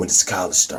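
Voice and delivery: gruff grunting put-on voice. Retelling a scene, voicing Norman Osborn asking his son about college: grunty Norman Osborn voice. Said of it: "grunty voice".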